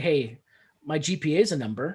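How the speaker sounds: ordinary delivery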